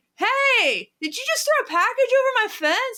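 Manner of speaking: put-on very high projecting call. Retelling calling out to a delivery man, imitating projecting to be heard. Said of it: "I'm just, like, projecting so I can be heard".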